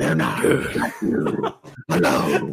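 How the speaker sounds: deep gravelly superhero voice. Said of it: "he's talking like this".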